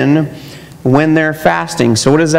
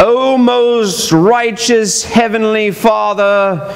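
showy fake English accent, very slow; 5 semitones higher than usual. Mocking people who change their voice when praying aloud, put-on english accent. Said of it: "all of a sudden they get this English accent".

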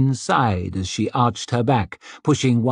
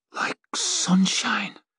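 very high, soft mumble through a full mouth; 11 semitones higher, 5 dB quieter than usual. Chewing a sweet, he answers Lisbeth's question, mumbled. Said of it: "he mumbled".

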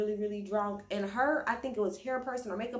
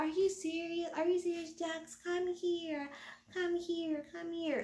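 put-on high, belligerent, sloshed drunk voice; 8 semitones higher, 4 dB quieter than usual. Retelling how a very drunk woman confronted someone, imitating someone drunk and belligerent. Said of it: "being super, super drunk and belligerent as hell".

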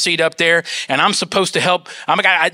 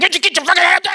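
put-on high, enraged, exasperated furious screaming; 11 semitones higher than usual. Recalling losing it in front of nurses and doctors, retelling a scream. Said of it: "I'm screaming".

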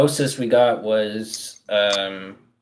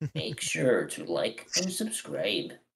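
lukewarm, half-hearted, swooping sing-song character voice; 11 dB quieter than usual. Joking about a video intro with friends: half-hearted Chillsman impression. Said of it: "Chillsman impression".

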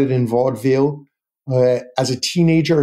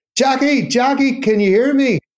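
put-on loud, very high, drunken calling out; 12 semitones higher than usual. Retell Brendan Behan in Dublin speaking to Jackie Gleason in New York, imitating Behan loud and drunken. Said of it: "in a kind of a loud, drunken voice".

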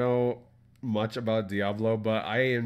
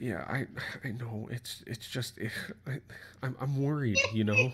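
put-on worried housewife voice, much quieter; 5 dB quieter than usual. Acting out a bit about a drunk husband, in a worried housewife voice. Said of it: "I just wanted to sound like a worried like housewife".

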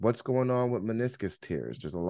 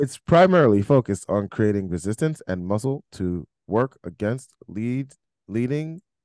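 artificial, machine-like voice; 7 dB louder than usual. Reading text aloud to listeners, reading like an AI. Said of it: "I'm trying to read this like an AI".

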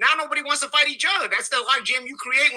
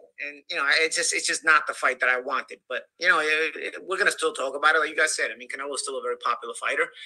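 low, subdued, downcast way of speaking. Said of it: "Paulie, don't sound so down".

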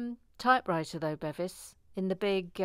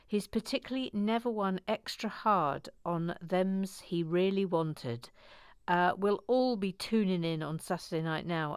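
ordinary talk, nothing marked

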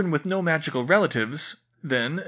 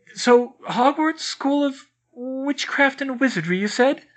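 faltering, halting, stammering, high-pitched voice; 9 semitones higher, 3 dB louder than usual. Emma to McGonagall after seeing a table float; stammering. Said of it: "Emma stammered".

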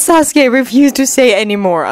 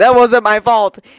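plain reading voice

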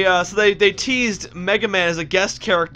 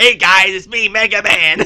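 loud voice like a lifelong chain smoker; 6 dB louder than usual. Recalling the Captain N cartoon, the speaker imitates Mega Man's voice, like a chain smoker. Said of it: "I sound like a 40-year-old chain smoker".

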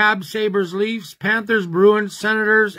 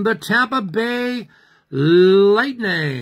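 slow put-on French accent, announcer voice. Announcing the winner of a draw, in a French accent. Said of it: "That's my French accent".

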